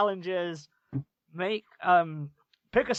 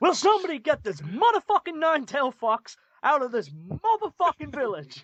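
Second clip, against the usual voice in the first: fired-up, high, swooping, animated movie-star delivery; 7 semitones higher, 3 dB louder than usual. Imagining a cartoon character's line as if played by Samuel L. Jackson. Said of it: "if Samuel L. Jackson reprised that role".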